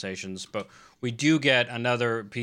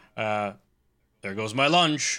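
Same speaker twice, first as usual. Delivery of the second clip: dry, deadpan straight-man delivery, no joking. Recapping a show scene, the speaker quotes Captain Nelson in his straight-man voice. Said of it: "in his straight man voice goes".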